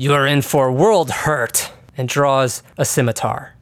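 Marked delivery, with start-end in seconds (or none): 0.0-1.7 put-on heavily broken, mangled, barely learned Common accent. Narrating a tabletop game, speaker voices a stranger in a very broken Common accent. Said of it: "with a very broken common accent".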